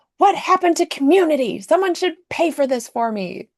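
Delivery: loud, high-pitched yell at top of lungs. Retelling a woman in a grocery line demanding others pay, imitating someone yelling. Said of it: "yelling at the top of her lungs".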